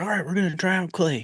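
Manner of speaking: put-on thick Southern accent. Retelling what the high school art teacher told the kids: imitating Mister Hickey's thick Southern accent. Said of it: "really thick Southern accent".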